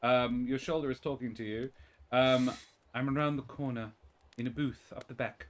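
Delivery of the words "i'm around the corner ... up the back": hushed half-whisper, close to the ear. Voicing a hidden figure who half-whispers directions into a player's ear: half-whispering. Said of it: "A whisper in your ear, over your shoulder".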